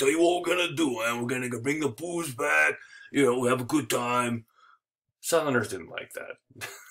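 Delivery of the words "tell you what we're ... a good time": put-on heavy New York accent, laid on thick. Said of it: "he had a really thick New York accent. Like".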